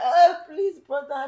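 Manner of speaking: fake crying, high-pitched and loud. Retelling a sister's plea to her brother: imitating fake crying plea. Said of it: "she was pretending to cry".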